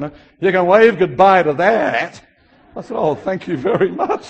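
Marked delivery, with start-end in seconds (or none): 0.4-2.2 loud, laid-on put-on Texas drawl. Retelling what a woman at the airport gate said to the speaker: Texas drawl. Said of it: "she said in her Texas drawl".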